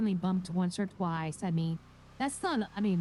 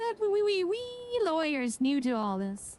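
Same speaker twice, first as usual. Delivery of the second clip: sudden put-on Irish accent, pitched up; 9 semitones higher than usual. Chatting with another lawyer about the good old days: irish accent. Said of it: "I don't know why I just went Irish there".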